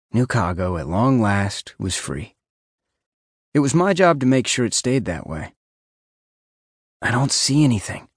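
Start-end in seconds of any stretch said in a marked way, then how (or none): 7.0-8.0 stage whisper, meant to be overheard. Kneeling at a rooftop edge, wearing a camera earpiece; whispered. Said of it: "I whispered".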